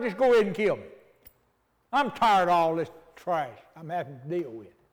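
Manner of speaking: mad, fed-up, angry outburst. Retelling a story to listeners, voicing a figure telling God to kill him: imitating angry Jonah. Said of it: "Mad enough to tell God".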